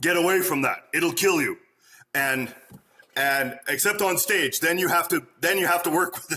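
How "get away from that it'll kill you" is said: firm, stern fatherly voice. Retelling warning children away from stage sets: stern dad voice. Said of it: "I had to use my dad voice".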